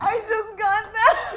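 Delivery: high, slow speech laughed through the words.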